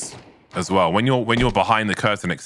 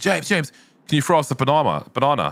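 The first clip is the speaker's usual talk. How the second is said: high, eager shouting, calling out; 6 semitones higher than usual. Retelling someone in the crowd shouting at the speaker: imitating a crowd member shouting. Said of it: "was just shouting at me".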